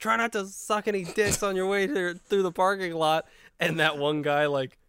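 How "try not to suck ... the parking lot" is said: high, jabbing, yelled voice. Retelling a movie scene, a character yelling after his girlfriend storms out: imitating a yell. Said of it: "she storms out and he yells".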